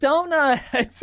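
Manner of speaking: very high, laughing, delighted cry of surprise. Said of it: "then now it's like".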